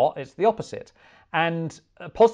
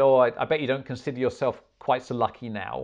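ordinary talk, nothing marked

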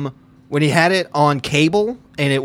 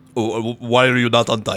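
put-on Russian accent; 3 semitones lower than usual. Given a prompt about a plumber being late, improvise in a russian accent. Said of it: "But you're Russian".

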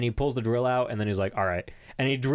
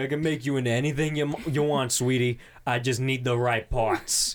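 put-on New Jersey accent, much slower. Retelling what this guy says to her: new jersey accent. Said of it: "He's super Jersey".

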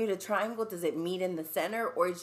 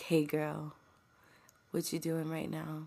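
mock sexy whisper in a man's voice; 3 semitones lower, 3 dB quieter than usual. Imitating a man's sexy voice memos in the DMs: imitating a man whispering.

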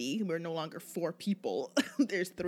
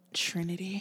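seductive, sexy, sultry voice. Explaining how the group's new name must be said: sexy voice on Trinity. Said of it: "you have to say it with a sexy voice".

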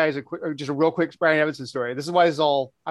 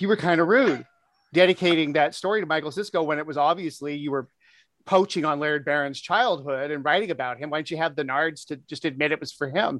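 normal talking voice

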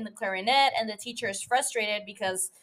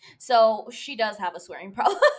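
ordinary delivery

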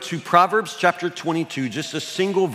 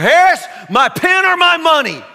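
very loud, very high, shrill, booming, drawn-out roar; 14 semitones higher, 10 dB louder than usual. Recalling a man who stopped class demanding money, imitating Mr. Brookshire roaring. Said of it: "He'd just stop in the middle of class and roar".

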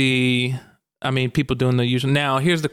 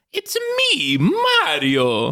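high cartoon character voice, pitch swinging around; 8 semitones higher than usual. Showing off an impression he says he usually charges for, in a Mario voice. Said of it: "Can I hear a Mario voice?".

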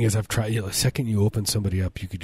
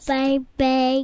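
put-on baby voice, much higher pitch; 4 dB louder than usual. Speaking for someone being coaxed to say hi, in a baby voice. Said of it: "I do a good baby voice".

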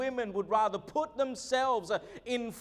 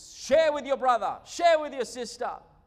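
raised, loud yell, carrying as if through walls; 5 dB louder than usual. Retelling telling the children through the doors to share: imitating own yell through doors. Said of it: "had to yell through the doors and walls".

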